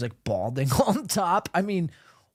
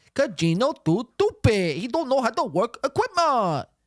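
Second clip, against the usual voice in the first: put-on Chinese accent, high-pitched; 9 semitones higher than usual. Mocking Gino for not knowing how to work equipment: put-on Chinese accent.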